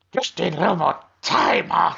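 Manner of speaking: high, raspy, creaky comic character voice. Discussing a game character, quoting his line to Arthur, imitating his funny voice. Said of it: "he does have a funny voice".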